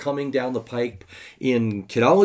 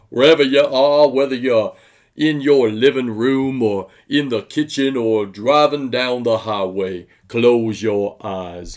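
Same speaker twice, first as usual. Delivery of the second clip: slow, loud, booming, projected address voice; 6 dB louder than usual. Opening a word of prayer with an imitation: Erwin Lutzer imitating Billy Graham. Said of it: "my imitation of Erwin Lutzer imitating Billy Graham".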